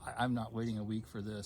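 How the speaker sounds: ordinary delivery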